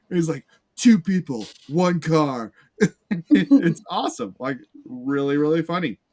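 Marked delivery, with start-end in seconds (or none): 0.7-2.5 slow, drawn-out sports-announcer broadcaster voice. Describing a movie character who learned English from sports broadcasters, sports announcer voice.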